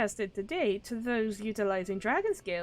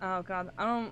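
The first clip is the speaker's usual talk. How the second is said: ordinary talk, nothing marked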